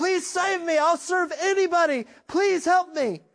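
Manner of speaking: screaming.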